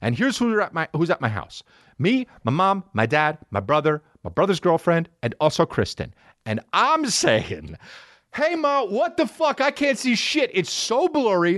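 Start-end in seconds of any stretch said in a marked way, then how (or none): 8.3-11.6 shrieking, screaming at a very high pitch. Retelling calling out to mom at home, reenacting own screaming. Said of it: "And now I'm screaming".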